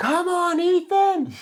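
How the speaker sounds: high-pitched, loud yelling.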